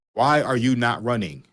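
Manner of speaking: loud, acted-out yelling. Retelling watching a game on TV: imitating own yelling at screen. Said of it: "And I'm yelling at the screen".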